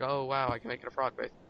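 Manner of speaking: normal talking voice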